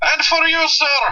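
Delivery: put-on very high Indian accent. You retell how a man takes an order from a customer, in an Apu voice with stereotypical Indian accent. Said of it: "the most eccentric Indian accent I think I've ever heard".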